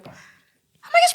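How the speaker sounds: giddy excited squeal.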